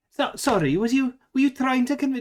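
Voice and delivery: lapsing into Scottish accent. Speaker asks someone what they were trying to convince, slipping into scottish accent. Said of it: "I've gone a bit Scottish there".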